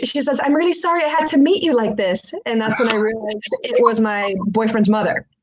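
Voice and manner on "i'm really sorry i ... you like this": put-on accented broken English, higher pitch. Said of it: "in broken English".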